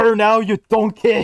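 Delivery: loud, high-pitched calling out. Imagining a GPS giving directions: Gordon Ramsay GPS voice. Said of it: "I always wanted a Gordon Ramsay G P S voice".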